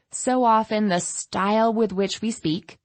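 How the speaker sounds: ordinary delivery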